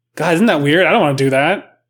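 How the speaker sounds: ordinary talk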